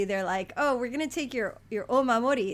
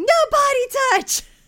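put-on shrill small boy voice, very high, full volume; 11 dB louder than usual. Retelling a haunted house visit where ghosts popped up, imitating the speaker's young son. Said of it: "my son would cross his arms and making a big X mark and going".

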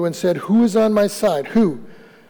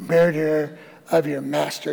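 mock condemning twisted voice, lower, quieter; 5 semitones lower, 4 dB quieter than usual. Retelling a woman's accusation in a story, in a mock-condemning twisted voice. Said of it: "That little twist in the voice".

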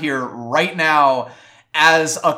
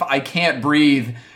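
imitated desperate pleading; 3 semitones lower than usual. Retelling a character pleading for his life: imitating desperate pleading. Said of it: "pleading for his life".

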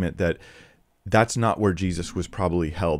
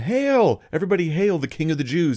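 mock very high swooping sing-song sarcastic tone; 9 semitones higher, 3 dB louder than usual. Retelling what the mockers called out to the crowd, retelling a mocking hail. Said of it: "They were like mockingly saying it to the crowd".

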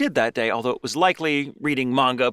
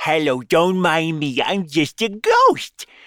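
swooping pitch with drawn-out delivery; 4 semitones higher, 4 dB louder than usual. Voicing the red lady ghost as Carol Channing: Carol Channing impression. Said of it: "that's a surprisingly good Carol Channing".

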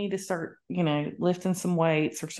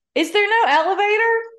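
very high, shrill, loud, insistent demanding yell; 7 dB louder than usual. Retelling how a woman started following you: retelling a yell. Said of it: "She just starts yelling".

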